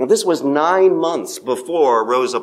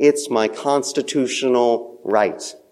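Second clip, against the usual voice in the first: ordinary talk, nothing marked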